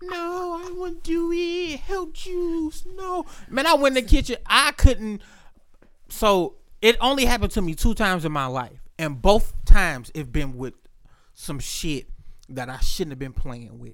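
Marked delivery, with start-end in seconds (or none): 0.0-3.2 very high, slow, drawn-out, weak pleading voice. Retelling own plea for help after a drink: imitating own weak pleading voice. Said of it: "I make myself sound like a bitch".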